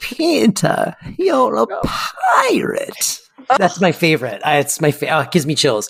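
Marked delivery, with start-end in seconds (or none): 0.0-3.2 put-on high, slow, creaky old-lady voice. Two speakers recalling Hook, one quotes the old lady Wendy: old Wendy from Hook voice. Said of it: "the old lady Wendy from Hook".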